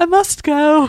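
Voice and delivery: full put-on British accent, high and loud. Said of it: "She's gone full British".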